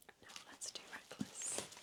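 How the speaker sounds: soft, very hushed, excited whisper. Showing books on camera and moving on to the next one, whispering. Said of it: "I don't know why I'm whispering".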